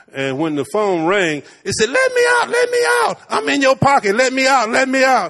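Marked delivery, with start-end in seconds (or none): 1.9-5.3 put-on little bitty high, sing-song baby voice. Retelling what a sister's talking phone said when it rang, in a little baby voice. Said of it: "it has a baby voice".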